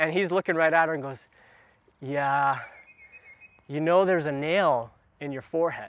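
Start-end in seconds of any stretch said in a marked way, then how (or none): 2.0-5.9 put-on considerate, caring, sympathetic, understanding tone. Retelling a video where a husband answers his wife: imitating a caring tone. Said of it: "He's trying to be caring".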